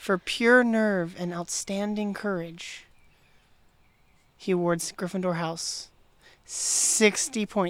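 measured delivery. Speaker quoting how someone said a line, in a measured way. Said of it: "He says it in a really, like, measured way".

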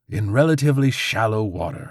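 theatrical, dramatic, flourishing delivery. A crow finishes the explanation its companion began, finishing dramatically. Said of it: "the crow finished dramatically".

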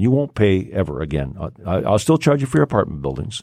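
ordinary talk

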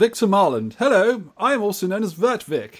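high, put-on posh accent. A podcast co-host introduces himself on the show: posh voice. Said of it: "we've got a posh voice already".

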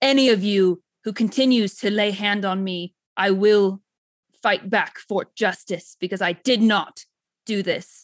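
loud booming voice thundering and resounding through the room. Your character, pelted with arrows, declares innocence to the crowd; booming voice. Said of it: "my voice just like booms throughout".

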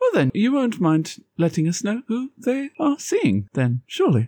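courteous but strained, swooping forced politeness. After a refusal to explain absent people, a character answers with strained smiling politeness. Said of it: "he's smiling, but it's a big, teethy smile".

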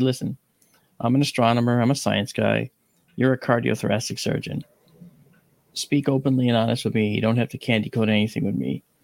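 ordinary talk

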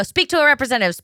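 put-on attitude-filled yell. Speaker retells talking to an automated phone line, retelling yelling with attitude. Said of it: "And I do it with such attitude".

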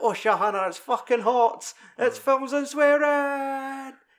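high, slow, put-on traditional Scottish accent. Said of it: "or just gonna go traditional Scottish".

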